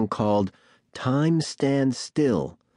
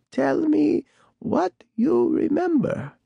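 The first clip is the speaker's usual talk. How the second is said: put-on very high, crackly, creaky old woman's voice. Reading a story aloud, the old woman speaks to the narrator, creaky old voice. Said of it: "she said in that creaky old voice".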